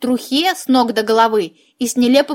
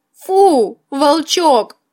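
sob-laughing, crying and laughing at once; 4 semitones higher than usual. The narrator calls out to the wolf cub, sobbing through laughter. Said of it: "прорыдалась сквозь смех я".

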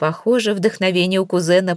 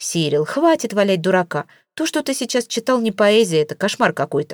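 ordinary delivery

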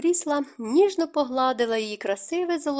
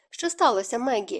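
plain reading voice

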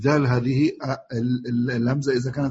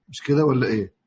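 ordinary talk

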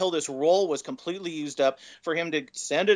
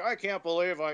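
put-on grumpy old man voice; 2 semitones higher, 3 dB quieter than usual. Retelling how a dad grumbled while digging out an old camera: imitating grumpy old dad. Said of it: "he's doing the old dad thing".

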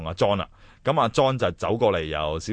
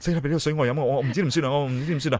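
mock-panicked, nervous, higher pitch; 6 semitones higher than usual. Retelling someone's reaction on seeing John back after years, imitating panicked nervousness. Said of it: "佢见到佢一路好紧张，".

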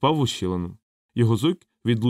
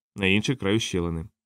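usual speaking voice

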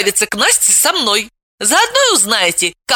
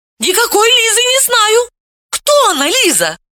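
very high, shrill yelled cry; 13 semitones higher than usual. Veta answering Dalila's accusation, shouting. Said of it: "закричала она".

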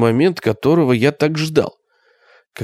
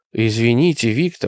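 plain

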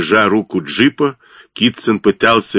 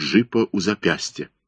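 usual speaking voice

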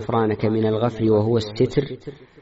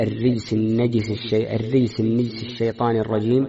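ordinary talk, nothing marked

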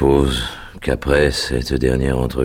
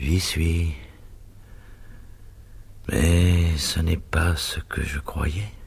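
murmur, higher and quieter; 4 semitones higher, 5 dB quieter than usual. Narrator reading a dying father's words after he suddenly calms, murmured. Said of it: "il murmura".

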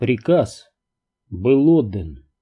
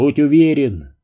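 plain reading voice

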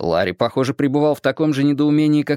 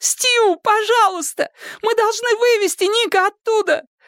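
very high, pleading, begging exclamation. Fran calls out to Stu, exclaiming. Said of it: "— воскликнула Френ".

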